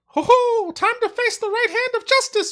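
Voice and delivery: very high, very loud cartoon mouse voice. Answering the other speaker's question about his voice, in a Mickey Mouse voice. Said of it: "Mickey Mouse voice".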